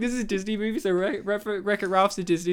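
ordinary talk, nothing marked

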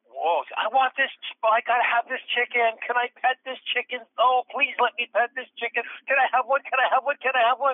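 put-on very high, drunk young woman's pleading, begging voice. Retelling a late-night encounter beside a bar: imitating a drunk woman. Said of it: "this really drunk young lady".

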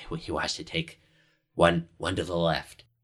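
hushed, whispered voice. A game master voices a character telling the players which path to take: whispering. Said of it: "Cadgy whispers to you and just says".

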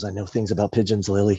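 put-on movie tough guy voice. Retelling a movie scene: Clint Eastwood delivery. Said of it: "In his Clint delivery".

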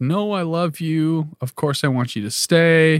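crying, high-pitched tearful pleading. Retelling how Julie reacted to her boyfriend, imitating her crying and begging. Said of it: "starts like crying and begging him like".

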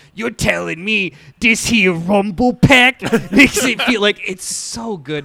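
loud, bad Brooklyn accent. Describing a video where one of two interrogators talks, in a shitty Brooklyn accent. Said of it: "this like shitty Brooklyn accent".

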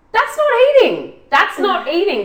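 getting loud. Complaining about a plain mince and rice meal plan: getting loud. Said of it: "I'm getting loud again".

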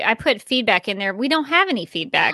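ordinary talk, nothing marked

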